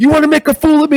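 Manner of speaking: put-on intense wrestler voice. Retelling how Rude grabbed her after breaking character: imitating Rude, intense. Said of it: "broke character and he's like".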